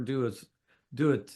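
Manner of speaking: normal talking voice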